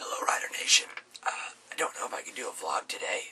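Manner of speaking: breathy fake whisper, as if voice gone. Opening a vlog while claiming the voice is gone: pretending to have lost voice. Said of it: "I've lost my voice".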